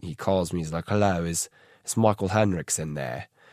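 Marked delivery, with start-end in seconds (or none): 0.9-3.3 put-on heavy British accent. Retelling a manager's phone call, imitating his heavy british accent. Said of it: "He's this heavy British accented man".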